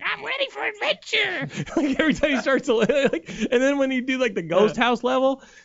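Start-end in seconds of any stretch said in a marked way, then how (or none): 0.0-1.7 very high, creaky, rough little cartoon squeak. Speaker quotes a video game character's line, in a Captain Toad voice. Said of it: "Toad has like 5 lines in the game".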